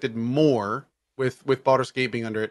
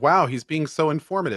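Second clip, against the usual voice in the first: ordinary delivery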